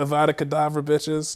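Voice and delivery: imitated British accent. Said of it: "I was talking with a British accent".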